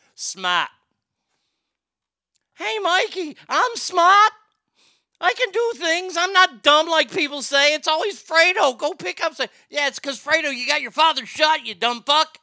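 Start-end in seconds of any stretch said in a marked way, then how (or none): 0.2-9.4 put-on high-pitched voice in a Boston accent. Quoting Fredo from Godfather 2 speaking to Mikey, in a Boston accent. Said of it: "He said it like he's from Boston".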